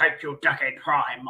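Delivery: terrible very deep, soft voice. Thanking someone called Decade Prime: terrible Optimus impression. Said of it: "I am a terrible impression of Optimus".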